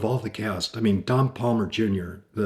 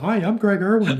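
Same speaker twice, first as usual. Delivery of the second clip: play-acted, bright, chipper, pitched-up voice; 11 semitones higher, 6 dB louder than usual. Retelling his own greeting to an actor on set: imitating his own chipper greeting. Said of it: "all chipper and saluting".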